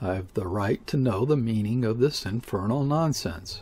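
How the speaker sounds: ordinary delivery, nothing marked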